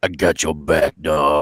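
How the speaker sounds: really low tough-guy voice, very slow and drawn out. Showing the better way to voice the hero: really low voice. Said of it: "do it like the really low voice".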